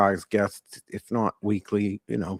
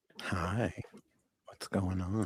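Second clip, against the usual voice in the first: put-on creepy voice, very quiet and slow; 12 dB quieter than usual. Greeting everyone, the speaker switches to a creepy put-on predator voice. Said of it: "I'm using my pedophile voice".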